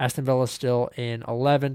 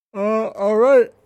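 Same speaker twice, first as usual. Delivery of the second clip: speaking through a yawn, higher and louder; 9 semitones higher, 6 dB louder than usual. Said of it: "Pardon me, I'm yawning".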